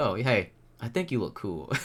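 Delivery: put-on laid-back, matter-of-fact, smooth, blunt delivery. Retelling a stranger's compliment again: imitating a blunt, chill, smooth delivery. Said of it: "blunt, yet chill and smooth".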